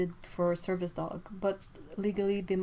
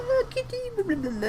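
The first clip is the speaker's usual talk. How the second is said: very high, goofy, silly cat voice; 5 dB louder than usual. Recounting talking to a cat on a lawn: silly cat voice. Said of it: "I have this silly cat voice".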